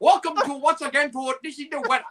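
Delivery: put-on Japanese newscaster accent, very high. The speaker offers to show a better impression: Japanese news reporter impression. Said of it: "Japanese you know news you know uh, reporter impression".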